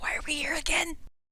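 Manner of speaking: high, hushed whisper in character voice. Voicing a character who points upward: whispering in character. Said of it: "Tyler points and he whispers".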